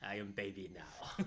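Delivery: put-on soft, thick, heavily leaned-into Russian accent. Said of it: "she really leaned into the accent".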